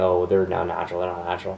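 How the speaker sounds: normal talking voice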